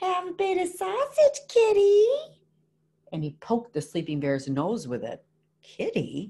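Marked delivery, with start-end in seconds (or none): 0.0-2.1 very high, shrill, screeching little troll voice. Narrator reads the littlest troll poking the sleeping ice bear, screeching little troll. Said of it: "and screeched".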